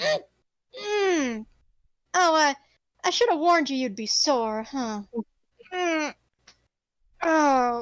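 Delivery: slow, groggy, pained half-awake groans and words. Voicing a wounded character who wakes up and sits up: waking sore and groaning. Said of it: "Roquefort almost sits up and then goes".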